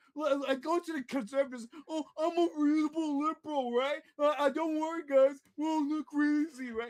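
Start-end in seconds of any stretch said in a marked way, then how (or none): 1.9-6.9 coaxing, placating, reassuring, persuasive tone. Mocking another speaker's liberal behaviour: Hunter impression. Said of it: "That's a spot-on Hunter impression".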